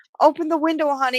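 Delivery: sweet, high, soft coaxing voice.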